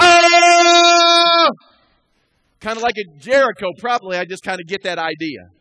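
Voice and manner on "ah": loud high battle yell. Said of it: "a bunch of guys are just going".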